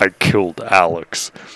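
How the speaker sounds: possessed, not-his-own demonic voice. Retelling a dream, speaking a line in a demon voice. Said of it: "I said it again".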